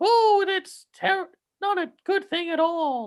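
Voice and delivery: very high, slow put-on female voice. Mocking how an actor voiced the fairy godmother, in a faux female voice. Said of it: "trying to do like a faux female voice".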